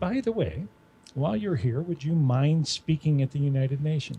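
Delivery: ordinary talk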